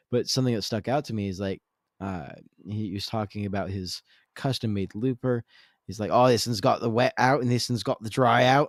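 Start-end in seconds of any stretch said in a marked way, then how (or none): 6.1-8.7 booming, loud, put-on Australian accent. Quoting a man from a rig rundown, in an aussie accent impression. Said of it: "that's my Aussie accent".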